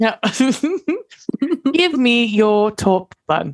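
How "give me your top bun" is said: slow, higher fake British accent. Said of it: "I didn't get to use my fake British accent today".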